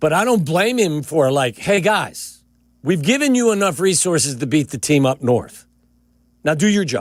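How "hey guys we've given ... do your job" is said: annoyed, frustrated, fed-up tone, patience gone. Voicing the owner's words to the team: imitating an annoyed owner. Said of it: "frustration or the annoyance in the voice of the owner".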